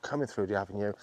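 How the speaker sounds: usual speaking voice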